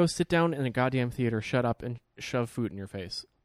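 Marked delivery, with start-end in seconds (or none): none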